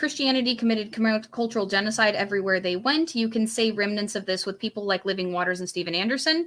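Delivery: ordinary delivery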